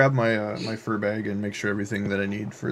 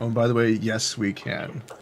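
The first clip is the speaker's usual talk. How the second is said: ordinary talk, nothing marked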